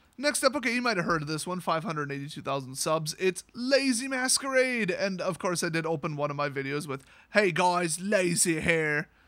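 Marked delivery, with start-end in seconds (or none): 7.3-9.0 very slow, dragged-out, terrible British accent. Speaker quoting the opening of one of their videos, worst british impression. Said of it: "the worst British impression ever".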